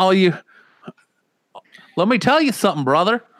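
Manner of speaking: very high-pitched Australian accent. Joking about an actor playing a wrestler: Hulk Hogan with Australian accent. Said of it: "I can't do that either".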